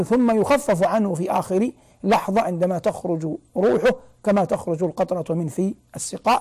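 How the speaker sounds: ordinary delivery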